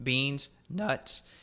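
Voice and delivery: cracked, breaking voice. Speaker lists problem foods for listeners, voice cracking. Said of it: "My my voice cracked".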